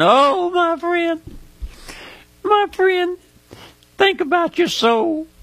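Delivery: high, strained, choked-up, emotional pleading. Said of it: "I get emotional sometimes".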